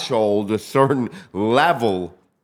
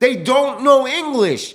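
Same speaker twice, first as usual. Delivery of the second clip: play-acted yell, high-pitched and raised; 13 semitones higher, 4 dB louder than usual. Retelling the district attorney's reply in court: imitating a yell. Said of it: "the district attorney would yell back".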